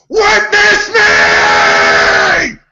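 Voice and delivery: shouting in a character voice. Playing a character who shouts up at the crowd on the cliff: shouting in character. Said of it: "he's just gonna shout out".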